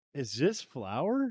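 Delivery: mock-sarcastic tone. Retelling questioning the worker who brought the tacos, retelling a sarcastic question. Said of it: "I said sarcastically".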